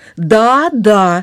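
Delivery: confident, self-assured, sure of itself. A quail answers a woodpecker's question in a story: confident. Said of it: "уверенно заключила перепелка".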